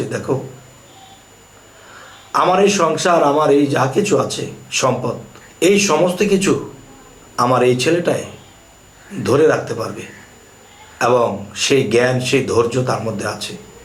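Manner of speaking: usual speaking voice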